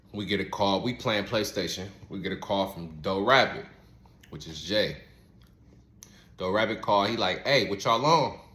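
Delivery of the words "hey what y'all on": put-on urgent tone. Retelling a phone call from a friend: imitating an urgent voice. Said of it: "He got some urgency in his voice".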